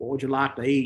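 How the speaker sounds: put-on southern US accent, plain delivery. Retelling what the serving boys asked, in a put-on southern accent. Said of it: "they had a southern accent".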